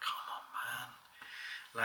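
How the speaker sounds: put-on whisper, deeply disappointed and upset. Retelling how he reacted when the ps vita was thrown, mimicking his disappointed upset. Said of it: "the upset that I heard in his voice".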